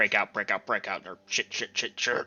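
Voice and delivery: repeated low, deep muttering. Asked what they are saying, imitating their low, deep muttering. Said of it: "low, muttering, deep voice".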